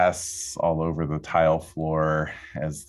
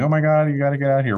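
put-on high, panicked, frantic screaming and crying; 10 semitones higher, 6 dB louder than usual. Recounting calling 911 during the emergency, retelling screaming panic. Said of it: "I'm screaming and calling 911 and crying and panicking".

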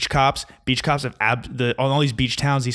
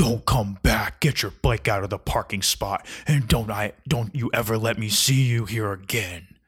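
mock-threatening tone. Retelling a man who threatened little kids about their bikes, imitating someone threatening. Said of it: "he's like threatening little kids".

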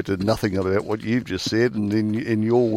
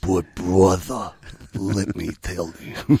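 slow, leaned-back, unhurried mobster voice; 3 semitones lower, 3 dB quieter than usual. Quoting a favourite gangster movie scene: Godfather mobster voice. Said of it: "my favourite scenes with Al Pacino".

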